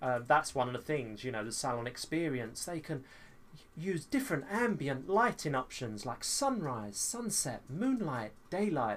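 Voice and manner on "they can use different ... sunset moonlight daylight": posh, swooping, read-aloud description tone. Reading straight from the website, in a posh description tone. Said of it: "This is my posh description tone".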